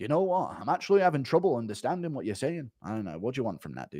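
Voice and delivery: very quiet, gentle voice. Acting out a chat with a slang-talking youth, Tom Aspinall impression. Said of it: "impression of Aspinall meeting with the urban youth".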